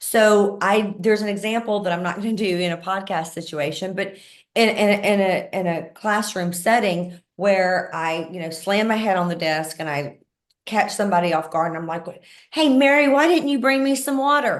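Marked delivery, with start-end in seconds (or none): 12.5-14.6 raised, aggressive, confrontational voice. Speaker demonstrates aggressiveness with a classroom example of asking for water, as an aggressive demand. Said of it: "that's aggressiveness".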